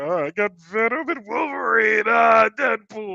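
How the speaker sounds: high, shouted monster voice.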